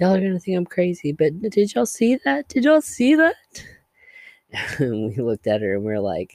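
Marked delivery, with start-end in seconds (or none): 0.0-3.4 acted very high, frightened, frantic rising scream. Retelling a girl in a hallway who saw something: retelling a girl screaming. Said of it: "one girl started screaming".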